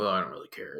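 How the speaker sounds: low, soft, indifferent don't-care tone.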